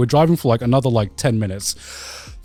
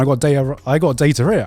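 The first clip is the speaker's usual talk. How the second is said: ordinary delivery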